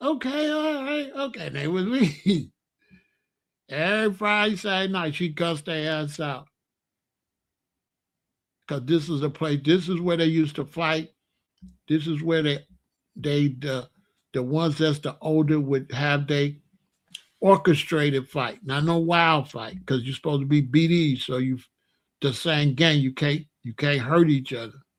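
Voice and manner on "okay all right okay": high, soft, meek voice. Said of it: "They're like".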